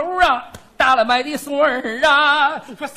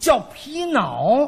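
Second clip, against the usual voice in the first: Tianjin dialect, 皮袄 pronounced 皮脑, 袄 said as 脑. Showing how a hawker in Tianjin calls out, in a Tianjin accent. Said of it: "有天津口音了".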